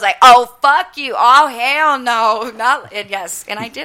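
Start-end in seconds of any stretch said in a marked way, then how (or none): 0.2-2.5 very slow, loud, drawn-out, dragged-out screaming. Retelling throwing people out, voicing what they yelled; retelling own screaming. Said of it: "I was screaming like".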